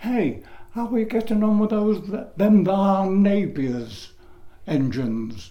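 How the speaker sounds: very loud remark called out lightly, up high. Retelling what people used to say in the pub, in a very loud voice. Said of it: "they'd say in a very loud voice".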